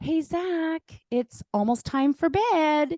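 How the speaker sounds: put-on very high, slow, sugary-sweet voice. Retelling telling a child it's almost bedtime: imitating own sweet tone. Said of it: "as nice as I could possibly be".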